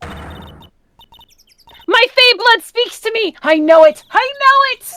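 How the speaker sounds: very high, very loud, very slow, drawn-out belting. Imitating a character's outburst about her Fae blood: Invader Zim voice. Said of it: "I was channeling Invader Zim for a second".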